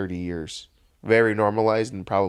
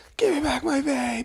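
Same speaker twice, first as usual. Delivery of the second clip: put-on very high, agitated, frantic outburst. Discussing funny memes, imitating a guy in a video who starts tweaking. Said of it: "the guy starts tweaking".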